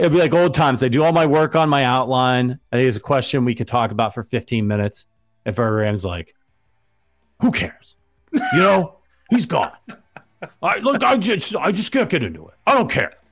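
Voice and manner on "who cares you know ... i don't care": very high-pitched voice with swooping pitch. Imitating a colleague dismissing a question: impersonating Verderame. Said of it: "Sounded like Verderame was on the show".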